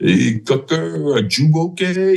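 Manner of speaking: put-on thick Puerto Rican accent. Retelling how the company first sergeant ran up and spoke, in Santiago's thick Puerto Rican accent. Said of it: "so got that thick accent".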